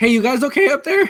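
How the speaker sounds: shrill, very loud, high-pitched shouting. Calling up to the others to check on them: yelling. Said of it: "Stop yelling".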